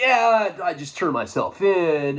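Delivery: slow, drawn-out caricatured surfer-dude talk. Retelling own past words to an inmate: imitating own surfer talk. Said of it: "I'm talking like a surfer".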